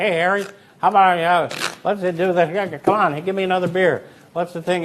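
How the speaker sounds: easygoing casual chatter. Acting out the casual guy you want to play cards with: imitating a casual card player. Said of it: "the guys that say".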